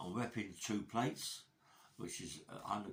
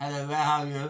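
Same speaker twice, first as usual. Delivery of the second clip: very posh voice, loud, high-pitched, at full volume; 6 semitones higher, 15 dB louder than usual. Retelling how a fellow prisoner talked: imitating a very posh voice. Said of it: "Talk very posh".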